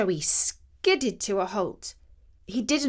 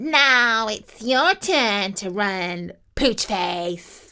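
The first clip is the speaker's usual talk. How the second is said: slow, menacing snarl of a beast; 4 dB louder than usual. Narrator reads the line of a beast chasing poor Joey: snarling. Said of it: "He snarled".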